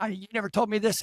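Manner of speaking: play-acted furious outburst. Retelling a man's outburst at the beings: imitating someone angry. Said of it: "he's all angry, like".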